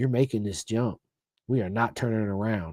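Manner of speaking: dead-serious, hushed half-whisper at close range. Retelling a jump, the guy clipped in behind him half-whispers; imitating a half-whisper in the ear. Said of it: "he whispers in my ear".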